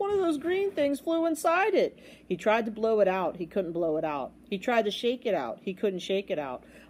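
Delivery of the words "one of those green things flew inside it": gulping, very high voice. The royal trumpeter, something stuck in his horn, gulping. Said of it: "he gulped".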